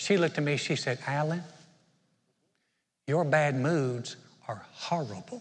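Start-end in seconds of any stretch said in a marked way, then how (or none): 1.1-5.4 broad, slow southern drawl, horrible stretched to four syllables. Retelling what a coworker said as the speaker left: imitating Luann's southern accent. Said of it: "one of the most southern accents".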